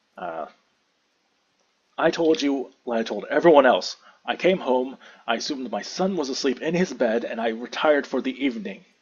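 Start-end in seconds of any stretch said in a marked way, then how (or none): 2.0-8.8 very offended, indignant, in-character delivery. Playing the father answering the interrogator's accusation: in-character offended. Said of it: "now very offended".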